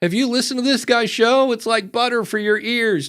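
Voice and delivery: high, gushing, effusive rave. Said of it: "people aren't going".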